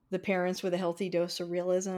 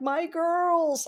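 choked-up, very high squeak with tearful break; 10 semitones higher, 4 dB louder than usual. Retelling a movie moment: imitating Bob Odenkirk tearing up. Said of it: "Bob Odenkirk tearing up and being like".

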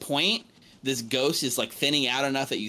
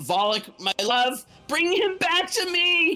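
shrill, very high, rising, desperate yell; 4 dB louder than usual. Game master voicing a trapped woman calling to Volik; yelling. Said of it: "She's yelling".

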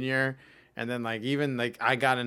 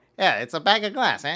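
put-on Chicago accent, pitched up; 6 semitones higher, 7 dB louder than usual. Speaker shows the voice they do when in Chicago, put-on Chicago accent. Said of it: "that's the voice I do when I'm in Chicago".

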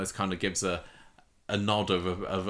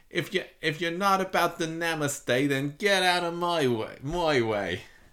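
put-on New Jersey accent, much higher, slower; 9 semitones higher, 3 dB louder than usual. Repeating a woman's impression of a reality-show line, New Jersey accent impression. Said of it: "her amazing New Jersey impression".

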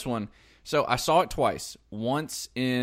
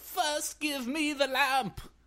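put-on very high, pitched-up old man voice; 3 dB quieter than usual. Wishing aloud to see old man Jafar: Jafar voice. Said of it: "I really wanted to see old man Jafar".

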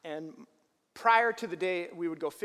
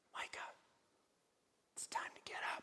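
very quiet, hushed, breathy whisper. Retelling how the dad woke him before dawn: imitating a whisper. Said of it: "he would whisper".

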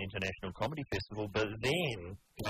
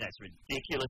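normal talking voice

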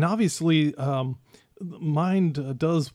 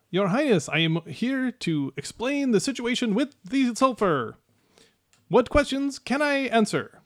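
small, high little gnome voice; 7 semitones higher than usual. Narrating the game, the storyteller voices a summoned gnome in a gnome voice. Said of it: "summons a gnome forth".

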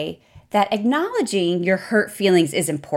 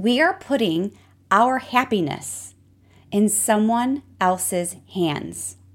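slow, unhurried, deliberate, every word weighed. Speaking to the audience, saying it slow and deliberate on purpose. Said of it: "I'm saying that slowly on purpose".

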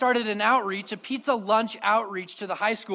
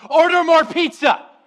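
high, very loud, full-volume yell; 8 semitones higher, 10 dB louder than usual. Retelling calling to helpers as crowds of students arrived: retelling own yell. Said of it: "I looked at him and I yelled".

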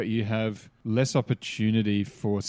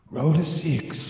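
fake Japanese accent, wise-master voice, high pitch; 6 semitones higher than usual. A player describes the sensei voice in his head, in a put-on mock Japanese sensei accent. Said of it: "He just puts on a racist voice".

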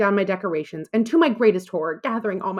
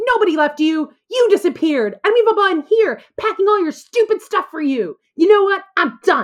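mock, very high, loud, furious scream; 11 semitones higher, 5 dB louder than usual. Retelling how a girl threw pants at the speaker, retelling an angry scream. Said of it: "screamed back".

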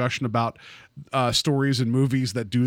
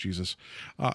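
usual speaking voice

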